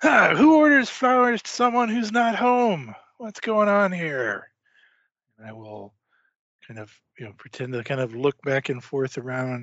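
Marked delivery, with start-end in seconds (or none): 0.0-4.5 loud, high-pitched, irritated, annoyed call-out. Acting out a doorstep scene where nobody answers, calling out loudly and annoyed. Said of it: "I will call out very loudly in an annoyed sort of voice".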